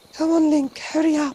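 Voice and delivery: put-on affected anime-style British accent. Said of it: "I hate that voice".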